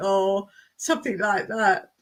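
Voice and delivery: ordinary talk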